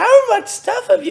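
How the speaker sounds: very high, loud put-on girly voice. Reading Kate S.'s question aloud, the speaker puts on a girl voice. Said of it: "Here's my girl voice".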